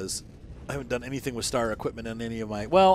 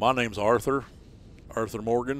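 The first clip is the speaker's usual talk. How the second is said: put-on Texas accent. Showing off voices he can do, in an Arthur Morgan Texas accent. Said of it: "It's a Texas accent".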